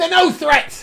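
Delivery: put-on toothless woman voice. Voicing a toothless woman leaning over to Callahan: toothless woman voice. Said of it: "gives this toothless grin".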